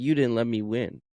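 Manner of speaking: put-on crying, tearful child voice. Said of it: "she's crying".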